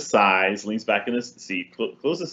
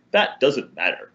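put-on haughty, superior, dismissive voice; 4 semitones higher than usual. Retelling her reply after a woman pointed at the sentence, put-on arrogant voice. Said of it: "explained in the most arrogant voice I could possibly find".

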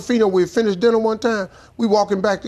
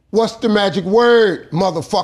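harsh, demanding, no-nonsense tone; 4 dB louder than usual. Retelling a demand for the magic word: imitating Sam's harsh demand. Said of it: "And he done said it so harsh".

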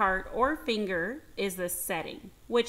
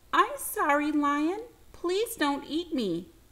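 tiny, high, squeaking mouse voice; 6 semitones higher than usual. Reading a fable, the tiny mouse pleads with the lion, squeaking like a mouse. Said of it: "the mouse squeaked".

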